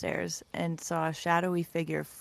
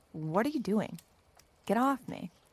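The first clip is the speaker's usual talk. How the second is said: snarling through clenched teeth; 4 semitones higher than usual. Narrator voices a pinned-down woman struggling in her sleeping bag, snarled through gritted teeth. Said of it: "She snarled through gritted teeth".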